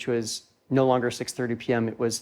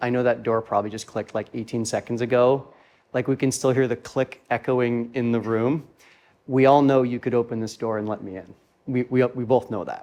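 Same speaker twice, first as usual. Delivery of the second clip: normal talking voice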